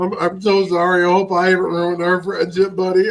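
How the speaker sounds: put-on glum, sad and apologetic tone. Retelling how Worf got all sad: imitating Worf sounding sad. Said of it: "Worf gets all sad".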